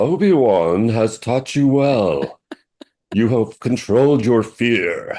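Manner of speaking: put-on horse-like character voice. Trying out a quoted line, in a put-on horse voice. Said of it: "that's with my horse voice".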